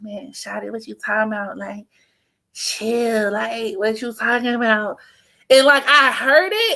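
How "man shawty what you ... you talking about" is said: cool, easy, laid-back, smooth, calm, soft delivery. Retelling his calm answer on the phone: imitating a smooth calm reply. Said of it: "he was so smooth. He was like".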